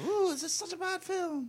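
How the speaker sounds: put-on squeaky, very high-pitched whining voice. Quoting a man who watched a film on his own: high-pitched voice. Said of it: "In a high-pitched voice".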